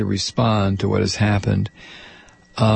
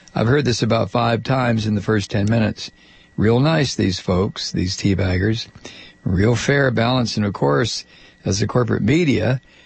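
usual speaking voice

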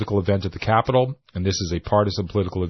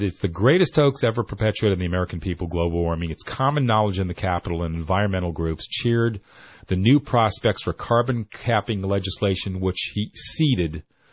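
ordinary talk, nothing marked

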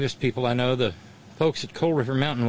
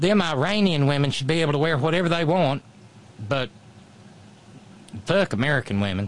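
put-on Tennessee accent. Speaker warns listeners about a woman approaching on the sidewalk, Marsha Blackburn Tennessee accent. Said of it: "some woman with a Tennessee accent".

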